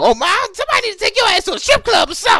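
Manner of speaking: high, fast, loud scream.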